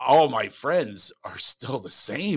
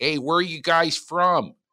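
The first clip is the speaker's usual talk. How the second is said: put-on Philadelphia accent, pitched up; 5 semitones higher than usual. The speaker imitates a Jersey Shore landlord greeting them: Philly accent. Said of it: "with a Philly accent".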